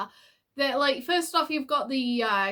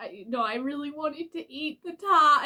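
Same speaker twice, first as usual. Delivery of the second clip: put-on slow, drawn-out, sulky little-kid voice; 2 semitones higher than usual. Reacting to an episode, imitating a little kid after a crash out. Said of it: "sounded so much like a little kid".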